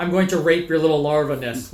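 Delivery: ordinary delivery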